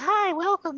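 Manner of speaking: little squeaky teddy bear voice, very high. Recounting a teddy bear greeting them from the rubble, in a little squeaky teddy bear voice. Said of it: "they hear this little squeaky voice".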